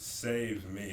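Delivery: ordinary talk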